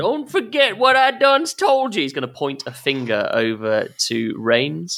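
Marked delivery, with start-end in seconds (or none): 0.0-2.0 very high-pitched, called-out shout. Voicing a character in a tabletop scene, the speaker has him shout out: shouting. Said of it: "basically shout out".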